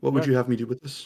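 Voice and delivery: subdued character voice. Voicing a character shown a valuable vial: subdued character voice. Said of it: "this guy is so subdued in everything that he says".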